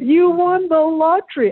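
excited shout. Speaker recalling their mom shouting when they came home one day, retelling mom's shout. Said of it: "she's shouting like".

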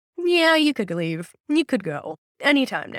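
casual, offhand, nonchalant spirit voice. Retelling a spirit box reply: imitating a nonchalant spirit voice. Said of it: "hence why I said it very nonchalantly".

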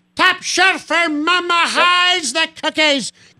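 very high, nasal, squeezed cartoon voice. Quoting a play-by-play caller's famous phrase: Rick Jeanneret impression. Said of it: "kinda like a nasally cartoon character".

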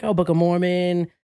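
ordinary talk

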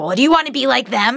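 angry voice. Retelling her mother's reply to a question: imitating angry mother. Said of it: "she'd get mad".

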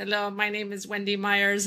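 stiff, flat robotic monotone delivery. Retelling how they introduce themselves when nervous: imitating own robotic nervous voice. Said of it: "I just get in this robot mode".

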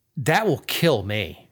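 normal talking voice

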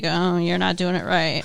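mock condescending, self-satisfied tone, low and smug. Mimicking a man telling a woman she's doing it wrong, mock-smug.

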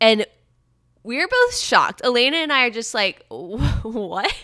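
plain

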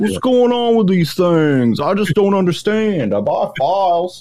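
put-on peculiar Maine accent, very high-pitched. Describing a big, nice guy he knows, imitate his very unique Maine accent. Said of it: "he has like a very unique Maine accent where he's like".

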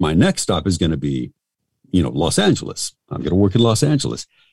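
ordinary delivery

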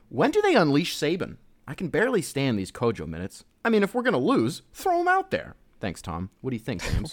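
over-the-top, exaggerated put-on voice, swooping high.

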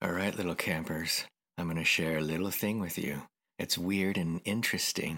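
soft, creepy uncle campfire storyteller voice. Speaking to listeners as little campers; creepy uncle voice. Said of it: "Is that why you're using creepy uncle voice?".

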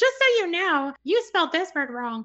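very high, irritating put-on voice. Quoting someone who replies to point out a typo, in a put-on annoying voice. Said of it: "I give them that annoying voice".

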